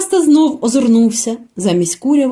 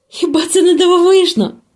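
high, delighted cry of wonder and delight; 6 semitones higher than usual. Seeing a herd of deer flee, she cannot hold back a delighted exclamation. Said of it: "не стримала захопленого вигуку Аравіс".

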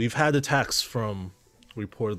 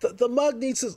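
faint, timid, sheepish voice, much higher, slower; 14 semitones higher, 3 dB louder than usual. Game master voices a man behind the counter as the player leaves, faint sheepish voice. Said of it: "faint, sheepish voice".

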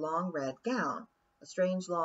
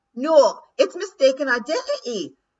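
very loud, slow, high-pitched, drawn-out shouting; 9 semitones higher, 12 dB louder than usual. Rob Anybody protests against the list of charges, shouting. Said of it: "shouted Rob Anybody".

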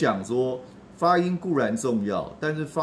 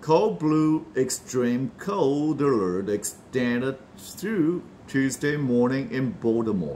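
very slow, "cold alert" linked together and extended. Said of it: "那连音的部分".

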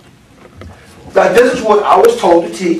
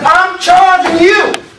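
high, slow, solemn proclaiming. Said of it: "He says".

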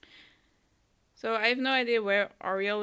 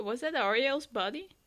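plain

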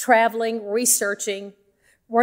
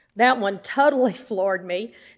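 normal talking voice

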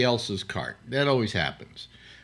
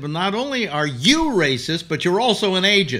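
high, loud, acted yell, up close; 7 semitones higher, 6 dB louder than usual. Retelling own reply in an argument over a tapped cart: imitating own past yelling. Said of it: "And I started yelling at him".

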